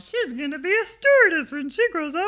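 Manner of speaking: high, loud, laughing, mocking singsong.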